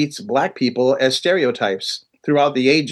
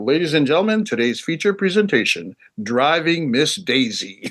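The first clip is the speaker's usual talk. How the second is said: film trailer announcer voiceover. Describing a trip to the movies, doing the voiceover: movie announcer voiceover. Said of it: "there's like an announcer that says".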